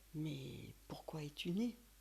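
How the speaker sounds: solemn, deep, grave, disembodied voice. She retells a voice she heard speaking to her; deep voice. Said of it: "une voix grave comme ça qui me dit".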